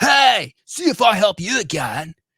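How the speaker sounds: very high, loud, slow, drawn-out surfer-dude drawl. Quoting a favorite Bill line from Star Fox, Bill as a total surfer. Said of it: "like total like surfer".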